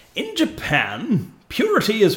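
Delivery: proper announcer voice, high and swooping. Speaker puts the voice on, in an announcer voice. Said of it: "I'll put up my proper announcer's voice".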